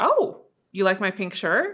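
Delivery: curious, inquiring, questioning intonation. Showing how to repeat her last words back with a questioning, inquiring tone. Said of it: "say it with an inquiry tonality, like I just did".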